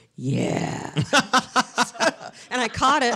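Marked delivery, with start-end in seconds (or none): 0.2-1.0 low-pitched man's voice. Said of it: "you hear this man's voice go".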